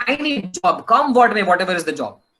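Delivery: normal talking voice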